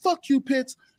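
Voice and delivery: shrill, furious yell, pitched way up. Retelling a confrontation on the street: imitating a man yelling. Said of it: "he's just yelling at me".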